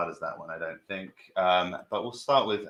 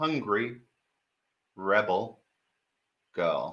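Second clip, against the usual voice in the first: slow, clear, carefully articulated enunciation. Repeating a costume name people misheard, with slow, clear enunciation. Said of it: "I will say slowly and clearly".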